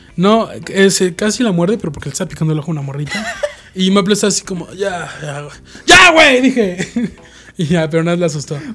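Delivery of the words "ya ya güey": ear-splitting, very loud yell, swooping in pitch. Recounting a moment with a small child, retelling a yell. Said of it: "disculpa por ese pinche grito".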